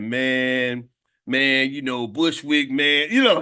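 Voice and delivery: put-on slow, drawn-out Texas accent, man's voice. Describing a longtime fellow group member, imitating how he talks in Willie's Texas accent. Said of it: "He's got that Texas accent. He'd be like".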